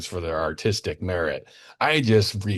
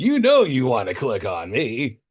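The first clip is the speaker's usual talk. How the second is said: sneering, mocking, sing-song dude voice; 4 semitones higher than usual. Ridiculing a guy showing off his film collection, voicing him as a douchey guy.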